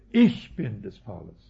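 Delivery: heavy stress on ich, loud and low. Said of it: "das Ich ist betont".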